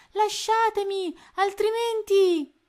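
shrill, very loud, high-pitched shout. Narrator reading a story, a captive surrounded by pirates, shouted. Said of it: "gridò".

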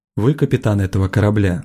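plain

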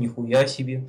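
quiet, hushed, said softly under the breath. Retelling a Russian man's reaction to the flash over Chelyabinsk, in a quiet voice. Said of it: "такой тихим голосом".

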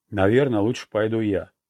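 plain

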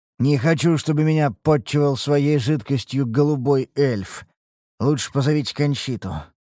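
plain reading voice

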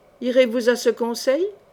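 ordinary delivery

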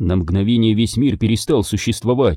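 ordinary delivery, nothing marked

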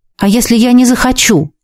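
ordinary delivery

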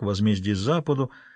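ordinary delivery

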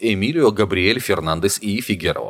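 plain reading voice

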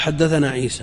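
ordinary talk

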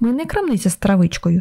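plain reading voice

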